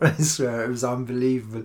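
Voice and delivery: ordinary talk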